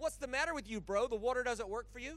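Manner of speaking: put-on sarcastic tone. Retelling a healing story, voicing a sarcastic question to a man who hasn't walked, retelling a sarcastic remark. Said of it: "Jesus is sort of sarcastic with him".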